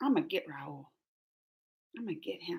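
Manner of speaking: very soft, low, mock-menacing tone.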